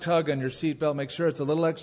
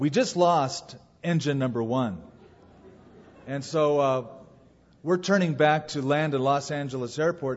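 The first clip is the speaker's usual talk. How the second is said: plain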